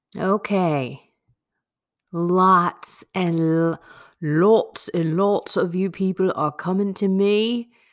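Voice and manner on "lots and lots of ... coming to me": bad put-on English accent. Opening a daily reality reflection video, bad english accent. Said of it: "That is the worst English accent I think I've done".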